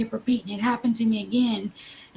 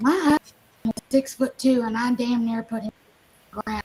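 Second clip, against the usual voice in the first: ordinary talk, nothing marked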